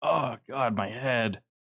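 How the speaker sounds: groaning moan, said to oneself. Narrating a game scene to players, voicing James moaning to himself. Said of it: "James's voice again as he's just kind of moaning to himself".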